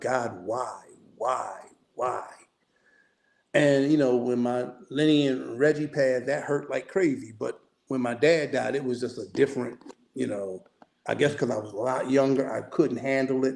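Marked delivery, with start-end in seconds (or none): 0.0-2.2 mock very slow, tearful, crying plea. Retelling begging God after a father died: retelling own crying plea. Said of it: "I was begging, I was crying".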